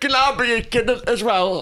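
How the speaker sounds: put-on northern English accent. Retelling joining in a bit about a kid, doing a put-on northern English accent. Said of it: "so I'll just do a northern one".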